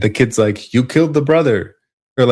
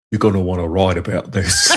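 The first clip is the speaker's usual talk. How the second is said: put-on British actor voice, lower pitch; 5 semitones lower than usual. Repeating the quoted line after being asked: Michael Caine voice. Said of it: "Michael Caine".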